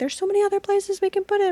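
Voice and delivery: mock freaked-out, frantic fretting, very high-pitched. Retelling a husband's reaction to giving money: imitating someone freaking out. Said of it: "kind of freaking out".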